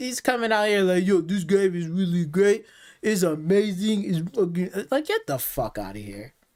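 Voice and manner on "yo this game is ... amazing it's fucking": derisive, dopey, goofy, gushing fanboy-style rave. Mocking a gamer who praises the game: mocking imitation of a goofy gamer. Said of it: "that fucking goofy ass gamer".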